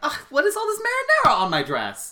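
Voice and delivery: very high, loud, irritated, annoyed woman's voice. Retelling a movie's ending, the speaker does the woman's line in a mock-annoyed voice. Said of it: "she's like".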